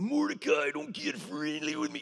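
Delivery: put-on gritty wrestler voice, pitched way up. Retelling a first take of a line, done as Randy Macho Man Savage. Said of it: "I just went to Randy Macho Man Savage".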